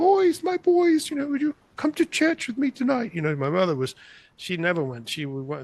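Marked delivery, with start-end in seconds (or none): 0.0-3.1 queen's english impression, much higher. Retelling his mother's evening phone call, imitating her Queen's English. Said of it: "very spoke the Queen's English".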